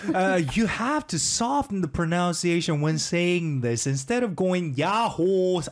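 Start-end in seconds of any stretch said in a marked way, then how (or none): 4.7-5.6 야호 said fully in earnest, serious. Explaining how to say the greeting: serious yaho. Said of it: "all serious".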